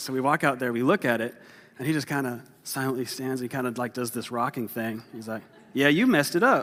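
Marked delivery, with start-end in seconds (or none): 5.7-6.6 exaggerated put-on Southern accent, loud and high. Quoting the speaker's dad, who is from Detroit, in an exaggerated Southern accent. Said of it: "I'm making him sound way more Southern".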